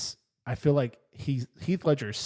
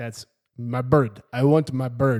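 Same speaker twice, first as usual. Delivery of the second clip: loud, bad put-on Russian accent; 5 dB louder than usual. Mocking Mickey Rourke's villain in Iron Man 2, a bad Russian accent as Whiplash. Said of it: "Why do you have that ridiculous accent?".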